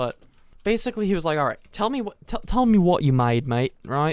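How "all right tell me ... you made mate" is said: put-on Australian accent, held throughout. Quoting what a man said to him, in an Australian accent. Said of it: "That's an Australian accent".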